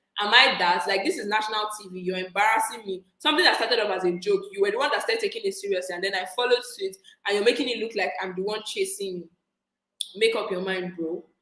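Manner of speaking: usual speaking voice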